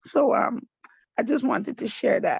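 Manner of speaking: crying, tearful. Speaking to the group after becoming too emotional to go on, crying. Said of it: "releasing through tears".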